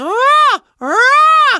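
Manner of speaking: very high, strained, ugly, dying-cat cry. Showing an ugly practice sound for stretching the voice: dying cat sound. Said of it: "I call it the dying cat".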